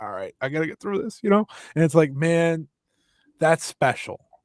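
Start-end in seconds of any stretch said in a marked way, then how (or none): 0.0-1.2 acted-out voice near tears. Retelling how Saya Kamatani held on mid-match: imitating Saya Kamatani near tears. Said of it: "literally on the brink of tears".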